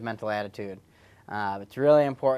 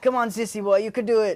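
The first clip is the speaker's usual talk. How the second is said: put-on Austrian accent, pitched very high; 10 semitones higher, 4 dB louder than usual. Joking that a fitness tracker talks like a coach: Austrian accent. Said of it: "turns on an Austrian accent and says".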